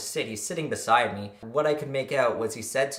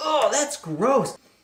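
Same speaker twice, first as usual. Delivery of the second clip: put-on very high-pitched whining like a big baby; 4 dB louder than usual. Retelling a friend refusing help: imitating someone whining like a baby. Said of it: "He was like a big baby".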